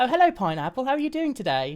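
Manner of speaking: mock British accent.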